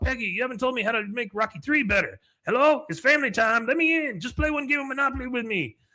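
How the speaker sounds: high yell. Retelling a scene where Enrique yells at a house: imitating Enrique yelling. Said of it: "And then he yells at the house".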